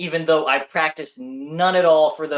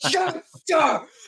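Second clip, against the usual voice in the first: mock very high, loud shout, full energy. Retelling their own answer to the yelling acquaintance: retelling own shout. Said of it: "I shout right back".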